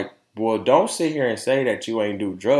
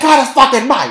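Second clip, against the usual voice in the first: put-on screaming, higher and louder; 9 dB louder than usual. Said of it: "she was screaming the whole time".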